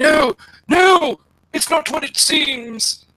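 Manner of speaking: very high, loud, drawn-out screaming. Voicing a cheater being carried off to the back room: screaming while dragged off. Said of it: "kicks and screams".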